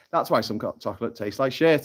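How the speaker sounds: normal talking voice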